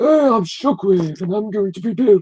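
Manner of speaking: high-pitched put-on character voice. Asked to do the voice while discussing a trailer, Shockwave voice. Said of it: "do the voice".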